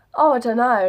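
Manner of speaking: mock clueless, dismissive tone. Retelling her answer about the gender: imitating herself playing dumb. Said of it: "playing dumb".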